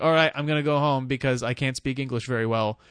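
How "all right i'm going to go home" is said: ordinary delivery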